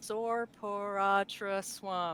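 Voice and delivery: very slow, careful sounding-out of words.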